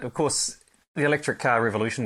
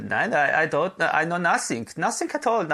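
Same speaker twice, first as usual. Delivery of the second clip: put-on over-the-top camp Austrian accent, high and swooping; 6 semitones higher than usual. Retelling what unhelpful phone staff said: camp austrian accent. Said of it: "my Austrian accent is really camp".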